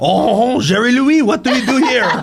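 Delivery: horrible fake French accent, high, laughing, hammed up.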